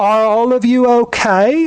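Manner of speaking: playful, loud, high-pitched shout. Voicing a woman who comes in and calls to the party animals, yelling. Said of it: "And then she yells".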